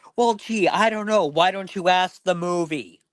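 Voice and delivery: very high, fed-up, irritated tone. Retelling the speaker's mother snapping at the dad during a movie, mock-irritated retort. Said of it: "my mother would get pissed off and go".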